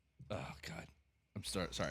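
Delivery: giggly, breathy half-whisper breaking with laughter. Apologizing after a joke about Rex Grossman, laughing while talking. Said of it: "I'm still laughing at Rex Grossman".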